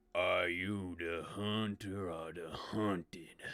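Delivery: deep, low, slow, deliberate, drawn-out voice. A narrator voices a strange figure addressing the listeners; low voice. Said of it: "a kind of low voice".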